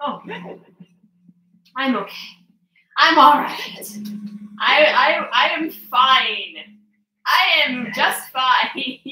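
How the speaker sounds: winded after laughing, breathless, high, very slow. Recovering from a laughing fit, breathless from laughing. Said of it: "I was laughing so hard I couldn't breathe".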